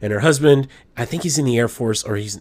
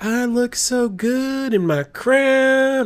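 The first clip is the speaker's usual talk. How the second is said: put-on over-the-top Arkansas accent, very high pitch; 12 semitones higher than usual. Quoting a woman talking about herself in her crown, in an exaggerated Arkansas accent. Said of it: "in her Arkansas accent".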